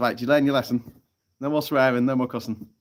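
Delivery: plain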